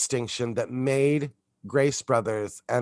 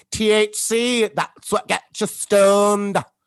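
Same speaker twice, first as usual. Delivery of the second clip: loud, very slow, drawn-out put-on British accent; 9 semitones higher, 6 dB louder than usual. Retelling what a sister on a TV show says: imitating a British accent. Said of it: "the way she says it".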